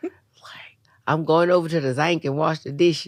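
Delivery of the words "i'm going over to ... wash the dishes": put-on southern Louisiana accent. Describing hard-to-follow Louisiana accents, the speaker imitates a southern Louisiana accent. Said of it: "they're different accents that sometimes it's like".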